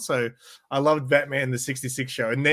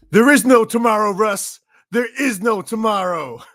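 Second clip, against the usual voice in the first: clumsy put-on American movie accent, loud and high; 7 semitones higher, 7 dB louder than usual. Quoting a character's line with the listener's name swapped in, bad impersonation. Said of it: "bad impersonation".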